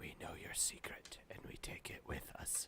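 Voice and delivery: loud, carrying, hushed stage whisper. Voicing a character leaning in to threaten a shopkeeper: loud whisper. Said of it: "and whispers loud enough so he can still hear him".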